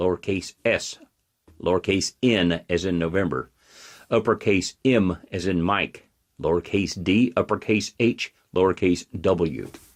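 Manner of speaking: slow, unhurried, measured, deliberate reading. Dictating a video link for viewers to write down: speaking slowly. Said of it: "so I'll say this slowly".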